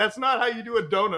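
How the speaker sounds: high, mild, fed-up half-yell. Retelling a dad reacting to a driving video: imitating dad screaming. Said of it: "my dad is literally screaming at the television".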